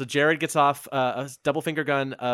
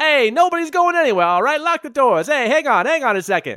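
loud put-on Italian accent, much higher pitch; 12 semitones higher, 8 dB louder than usual. Game master voicing a half-elf, half-Italian figure stopping everyone, loud Italian accent. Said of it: "a very loud voice ... half elf, half Italian".

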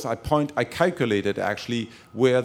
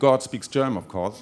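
normal talking voice

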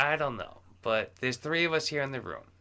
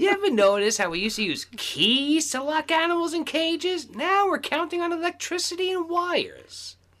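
put-on grumpy old commentator voice, higher, louder; 6 dB louder than usual. Riffing on a grumbling old man: Andy Rooney voice. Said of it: "He's the German Andy Rooney".

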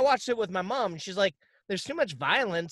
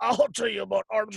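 put-on gruff voice. Describing a movie scene, the speaker quotes the actor's line in Josh Gad's gruff voice. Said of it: "using this gruff voice".

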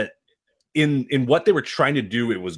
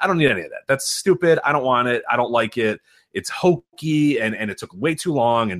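usual speaking voice

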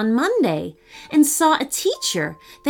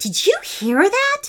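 very high, shrill, piercing shriek; 11 semitones higher than usual. Out of sight, a schoolgirl grabs her friend's hands, shrieking. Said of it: "shrieked Ella, all wide-eyed".

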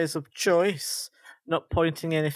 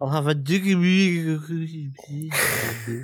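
mock drunken drawl, very slow and drawn out. Imitating someone ordering after their second drink, imitating drunk mispronunciation. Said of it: "they're not going to pronounce that properly".

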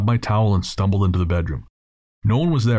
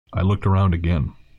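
ordinary delivery

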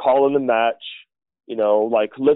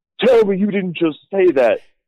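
angry, pitched-up, heated street slang outburst; 5 semitones higher, 3 dB louder than usual. Retelling how a wrestler broke character when angry: imitating Booker T angry.

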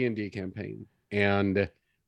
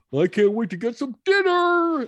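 very high, loud dog voice; 6 dB louder than usual. Explaining how they make up voices for their dog, speaking as the dog. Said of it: "come up with these voices like".

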